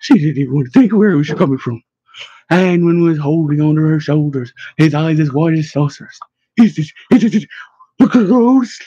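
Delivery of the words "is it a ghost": terrified hiss, much higher, slower. Narrating a character clutching a companion's shoulders outside a church, terrified hiss. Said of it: "He hissed, and he sounded terrified".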